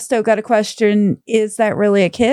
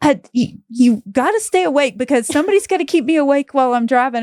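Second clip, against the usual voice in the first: insistent, half-yelled delivery; 3 semitones higher than usual. Retelling the drive home when a husband yelled: imitating husband yelling. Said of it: "my husband was just yelling at me like".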